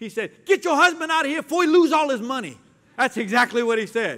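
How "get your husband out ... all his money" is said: loud, high-pitched, raised, carrying shout. Retelling what a homeless man said to the wife: imitating a loud voice. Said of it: "I heard this loud voice from a homeless man".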